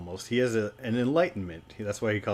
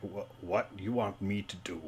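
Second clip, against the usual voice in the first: hushed, soft orc voice; 8 dB quieter than usual. A storyteller voicing the orc's reply to the players' plan, in Bront's orc voice. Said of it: "talking as the orc Bront".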